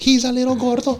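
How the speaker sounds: high-pitched cooing voice. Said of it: "have to talk in a high-pitched voice".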